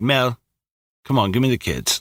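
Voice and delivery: nonchalant, offhand, tossed off like nothing. Retelling a movie scene where Gary asks Mel for the kids: imitating Gary, nonchalant. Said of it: "he is so nonchalant".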